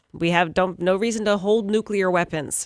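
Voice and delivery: ordinary talk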